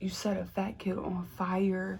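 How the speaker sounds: put-on whisper. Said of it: "So I whisper".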